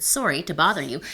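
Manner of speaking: put-on Canadian accent. Demonstrating an opening line to a woman, in a canadian accent. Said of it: "this is my Canadian accent".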